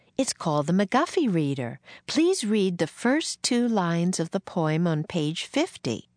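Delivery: ordinary delivery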